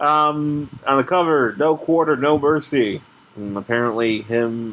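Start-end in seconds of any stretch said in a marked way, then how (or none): none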